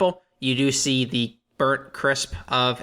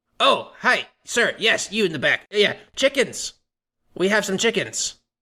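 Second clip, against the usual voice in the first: high-pitched goblin villager voice; 7 semitones higher than usual. Playing a goblin, the speaker answers a request for chickens: goblin voice. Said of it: "they talk in Goblin".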